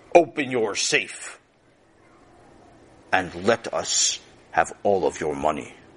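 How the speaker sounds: rough, low, gruff voice. Reading a story aloud, a masked robber demands the money: gruff voice. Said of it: "said in a gruff voice".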